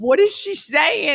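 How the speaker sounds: high, slow, gasped-out stunned disbelief.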